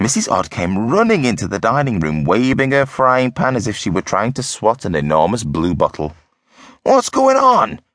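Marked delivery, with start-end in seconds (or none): 6.8-7.7 sudden, very high-pitched, shrill shout. Reading a husband as his wife runs in screaming, shouted. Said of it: "Mr. Odd shouted".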